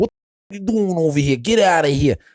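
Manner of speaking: put-on Brooklyn Italian accent. Comparing how different Brooklyn speakers sound, demonstrating one: Italian Brooklyn accent. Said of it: "an Italian from Brooklyn speak".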